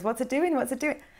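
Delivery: high, mocking, teasing little voice. Retelling how a boyfriend mocks an anxious inner voice: imitating boyfriend mocking the voice. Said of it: "takes the mick out of this little voice".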